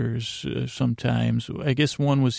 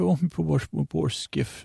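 Irish-sounding voice; 4 semitones higher than usual. Repeating a character whose skiff was ruined: put-on Irish-sounding accent. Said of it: "That sounds like more like an Irish guy".

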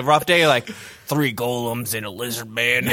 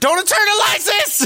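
acted, frantic, very high, shrill scream; 6 dB louder than usual. Picturing a friend walking in on the show: imitating Cody screaming. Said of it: "I just imagine Cody screaming".

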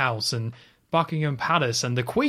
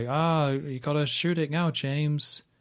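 listless, bored, very slow monotone; 3 semitones higher than usual. Retelling a tense film scene, imitating her bored delivery. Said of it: "she just sounds bored. Just like".

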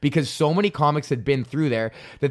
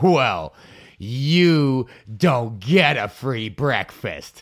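snide, taunting, slow mocking tone, drawn-out you; 2 semitones lower, 3 dB louder than usual. Recounting what a woman told the speaker, imitating her mocking tone. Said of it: "I'm not exaggerating her tone".

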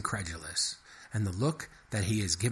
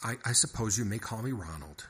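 ordinary delivery, nothing marked

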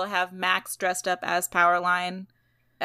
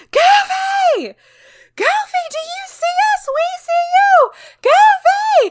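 very high, very loud, drawn-out excited screams; 13 dB louder than usual. Retelling two kids at Disneyland seeing a costumed character, imitating kids screaming. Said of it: "just screaming".

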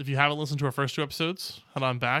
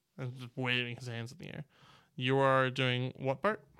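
usual speaking voice

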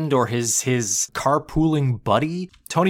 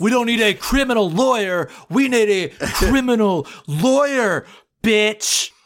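slow, pitched-up, leaning actor's drawl; 6 semitones higher than usual. Quoting a joke from Breaking Bad: Aaron Paul impression. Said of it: "Aaron Paul impression".

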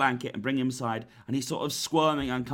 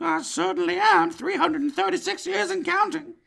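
put-on creepy man voice; 4 dB louder than usual. Playing an elf in a role-play, answering whether he is one of Santa's elves: creepy man from Family Guy voice. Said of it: "You sound a lot like the creepy man from Family Guy".

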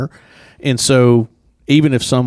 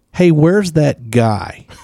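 put-on tiny, small little-girl voice; 4 semitones higher than usual. Speaker retells a little girl calling out for him, in a little voice. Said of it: "I hear this little voice say".

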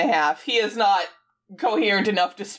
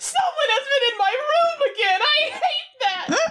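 put-on very high, drawn-out, slow shriek. Retelling a movie scene, imitating a character's scream.

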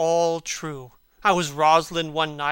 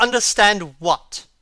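angry, raised, demanding voice; 4 semitones higher, 6 dB louder than usual. Narrator reading the man's reply to the woman's question, asked angrily. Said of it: "he asked angrily".

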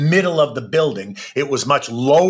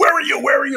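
put-on accusing, frantic scream pitched very high; 12 semitones higher than usual. Retelling a phone call where the caller screams a question: imitating someone screaming. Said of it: "she starts screaming at me".

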